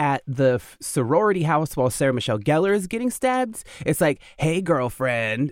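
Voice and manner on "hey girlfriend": put-on scary movie voice. Recalling a movie scene, quote Ghostface's phone call in the Ghostface scary-movie voice. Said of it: "in like the scary movie voice".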